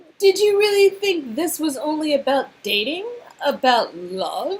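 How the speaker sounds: smug villain voice. Voicing a villain who holds a hostage: smirking villain voice. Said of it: "a smirk spreads across her face".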